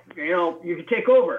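put-on loud, gruff voice with Philadelphia accent. Retelling a phone call from a gruff man from Philly: imitating Frank. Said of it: "Frank's kind of a gruff man from Philly".

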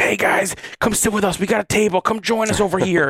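very high yelling and screaming. Retelling how retired players shouted across the ship: imitating someone yelling. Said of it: "yelling and screaming".

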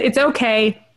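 ordinary talk, nothing marked

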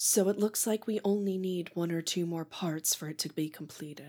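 soft, hushed half-whisper under the breath. Narrator voices Emberlyn as the player walks up, Emberlyn half-whispering. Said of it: "you are going to hear Emberlyn whisper".

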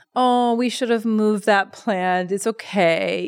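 mock gentle, soothing, comforting, reassuring tone. Retelling a grandfather reassuring his grandson about to cry, imitating a comforting tone. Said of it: "in this really comforting tone".

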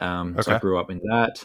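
usual speaking voice

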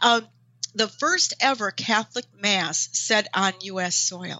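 choked-up voice catching with emotion. Describing a visit to a shrine, getting choked up. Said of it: "I'm getting choked up".

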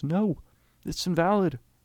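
high, loud shout. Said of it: "and he shouts".

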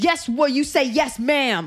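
furious scolding tone, acted out. Retelling a mother correcting a crying child: imitating a livid mother. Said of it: "Like she was livid".

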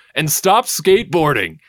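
put-on sudden yell. Recapping a dad character yelling at Tony: retelling a yell. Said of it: "just yells at him".

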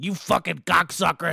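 put-on gruff, rasping, loud, rough, cranky old-lady voice. Retelling a grumpy coworker cursing while walking by: imitating a cranky old woman. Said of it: "she was one of those old bags who's like".

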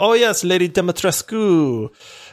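put-on thick, heavy, laid-on Romanian accent. Quoting a woman from Romania saying a name, heavy Romanian accent. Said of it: "she said it with a heavy accent".

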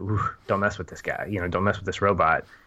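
ordinary talk, nothing marked

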